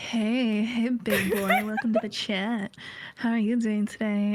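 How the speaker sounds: close-mic ASMR voice, right up on the mic. Speaker mocks a paywalled stream greeting a viewer, asmr voice close to mic. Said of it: "close to the mic, A S M R".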